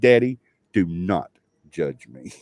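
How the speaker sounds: very serious, stern tone. Retelling what a daughter said with hands on hips: imitating a daughter speaking very seriously. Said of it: "And she was so serious".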